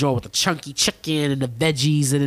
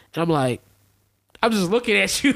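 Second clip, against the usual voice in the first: ordinary delivery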